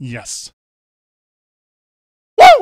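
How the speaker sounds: fired-up, very loud, high-pitched excited cheering yell. Hearing a played touchdown call, the host lets out an excited yell into the mic. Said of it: "I didn't mean to yell in the mic".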